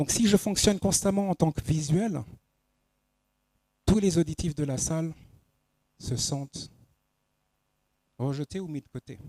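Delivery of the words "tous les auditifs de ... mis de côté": poised, serene, calm, composed voice. Showing how auditory listeners sound in a lesson: calmer, more composed voice. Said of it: "la voix que je viens de prendre, une voix plus posée, plus sereine".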